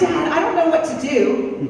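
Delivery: ordinary delivery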